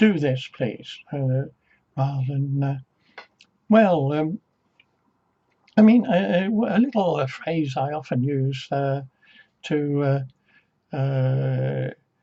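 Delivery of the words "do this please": bossy, very authoritarian commanding tone. Describing an inner exercise, role-playing somebody talking to you in a mock-authoritarian tone. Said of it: "talking in a very authoritarian tone to you and saying".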